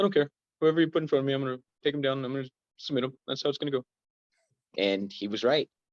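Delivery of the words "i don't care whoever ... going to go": put-on German accent, pitched up. Retelling a fighter picking opponents on the Ultimate Fighter: Travis's German-accented voice. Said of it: "in his Travis a German voice".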